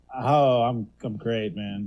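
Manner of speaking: slowly drawn-out, stretched-out words. A panelist on a show answers the host's greeting, drawn-out words. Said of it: "heard that sentence being drawn out".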